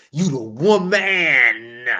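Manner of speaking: heavy stress placed on the word woman. Showing men how to address a woman who leads: said with emphasis. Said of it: "You gotta emphasize that man".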